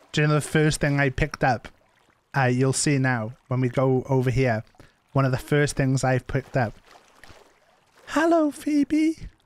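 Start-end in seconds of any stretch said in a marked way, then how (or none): 8.0-9.1 put-on very high, slow, stretched-out child voice. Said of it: "my child voice".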